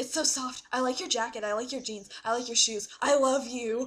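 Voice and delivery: mock creepy clown voice. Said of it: "he's, like, all creepy".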